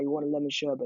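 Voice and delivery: put-on proper London Cockney accent. Retelling what a man said during a car journey, proper cockney accent. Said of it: "He had this proper like Cockney accent".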